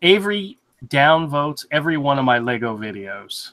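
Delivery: ordinary talk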